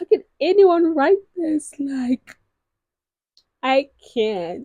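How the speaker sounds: fake crying through words. Recommending romance books to viewers, showing how they'll sob: mock crying. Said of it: "that type of crying".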